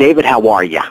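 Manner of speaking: imitated Massachusetts accent. Retelling a phone call from a kid in Massachusetts, imitating Keith's Massachusetts accent. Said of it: "he's very Massachusetts accent".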